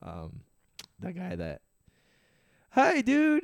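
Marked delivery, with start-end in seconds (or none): 2.7-3.4 very high, loud, squeezed cartoon voice. Showing a favorite voice to do: SpongeBob guy voice. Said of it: "favorite one to do is the SpongeBob guy".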